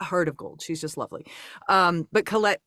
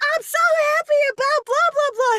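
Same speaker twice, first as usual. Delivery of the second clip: put-on excited childlike voice, higher, louder; 6 dB louder than usual. Retelling how the actor gushed about the show, imitating Paul, excited like a little kid. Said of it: "he was just so excited".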